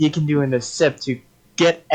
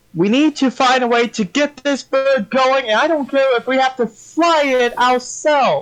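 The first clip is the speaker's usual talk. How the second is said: very high-pitched loud yelling; 10 semitones higher than usual. Voicing a character on a burning airship, yelling to the crew. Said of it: "he yells to the crew".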